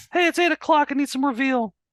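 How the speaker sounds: high-pitched cat voice. Showing the voice done for a pet cat: high-pitched cat voice. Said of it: "it's always high pitched".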